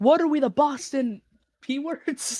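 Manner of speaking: mock mild, stretched-out, high scream. Retelling how a drunk guy behind at a hockey game started screaming: imitating someone screaming. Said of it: "he started screaming".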